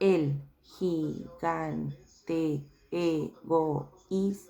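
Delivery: slow reading, syllable by syllable. Showing the kids how a slow syllabic reading sounds: slow syllable-by-syllable reading. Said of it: "Si yo realizo una lectura lenta, silábica".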